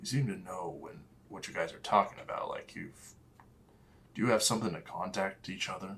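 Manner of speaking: quick hushed whisper under the breath. Speaking in character to another player, whispering. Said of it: "I'm whispering this".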